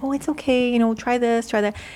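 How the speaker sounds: put-on kind, sweet, gentle, encouraging reassuring tone. Retelling how a practice mistake was gently corrected: imitating a sweet tone. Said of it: "I'd be so sweet to her".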